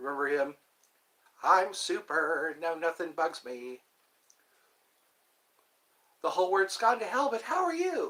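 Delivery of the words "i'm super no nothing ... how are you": high, swooping, sing-song cartoon voice.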